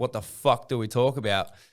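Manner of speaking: ordinary talk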